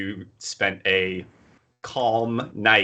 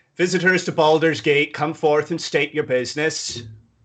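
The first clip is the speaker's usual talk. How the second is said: high, ringing, official-sounding yell; 8 semitones higher, 4 dB louder than usual. Voicing a guard calling visitors over from a gate: guard yelling out. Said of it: "He yells out".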